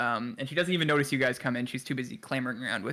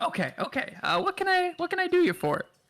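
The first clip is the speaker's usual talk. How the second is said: put-on woman's voice, much higher, slower. Voicing the woman checking her swords, in a put-on woman's voice. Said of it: "my woman voice".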